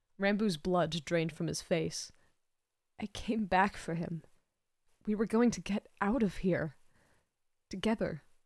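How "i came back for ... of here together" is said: barely above a whisper. A man answers a sneering man's taunts, almost a whisper. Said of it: "almost in a whisper".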